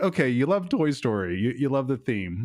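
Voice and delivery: ordinary talk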